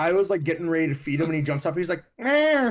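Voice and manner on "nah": very high, loud whining cry. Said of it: "like, whining for his food".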